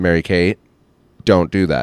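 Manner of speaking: firm, strict, stern voice. Showing the rule of three, giving the second warning: stern voice. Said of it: "I use stern voice on the second one".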